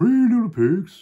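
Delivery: very high-pitched, shrill put-on dinosaur creature voice. Telling the three little pigs with a child, put-on dinosaur voice. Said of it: "I'm going to do a dinosaur voice".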